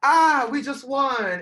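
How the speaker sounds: put-on sweet, cute French accent, high, very slow, drawn out. Retelling how he came backstage with the trophy: cute little french accent. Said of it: "his cute little, like, French accent".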